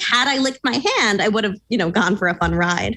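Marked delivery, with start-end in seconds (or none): none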